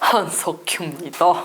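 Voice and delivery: voice dropped deep and low. Guest on a radio show does a requested impression, Han Suk-kyu impression. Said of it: "한석규 선배님 성대모사".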